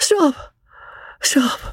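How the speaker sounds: weak, faint, feeble cry, very high-pitched. Narrator reads a voice calling out from the straw: feeble cry. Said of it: "A feeble voice cried from the straw".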